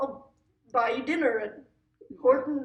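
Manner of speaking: put-on poor Canadian accent. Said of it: "I don't know how to do a Canadian accent".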